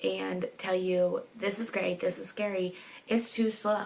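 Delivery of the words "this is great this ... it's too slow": ordinary talk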